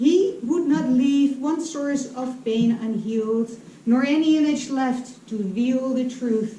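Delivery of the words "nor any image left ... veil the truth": plain reading voice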